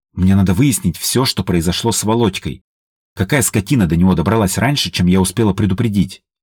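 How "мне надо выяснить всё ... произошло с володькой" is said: plain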